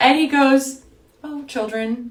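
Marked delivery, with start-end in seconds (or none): 1.2-2.1 mock deadpan, completely straight and matter-of-fact. Retelling how a man answered her question: imitating a dead-serious reply. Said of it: "Completely serious".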